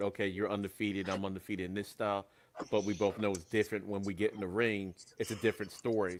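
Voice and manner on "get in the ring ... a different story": ordinary talk, nothing marked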